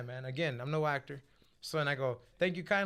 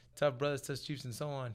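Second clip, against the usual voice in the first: normal talking voice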